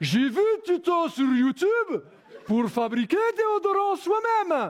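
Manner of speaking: very high, slow, put-on Russian accent. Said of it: "(Accent russe)".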